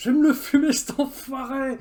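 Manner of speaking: very slow, loud, shrill, drawn-out yell. Rushing out after a wolf howl, vowing to kill it: yelling. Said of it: "Pourquoi vous gueulez, là ?".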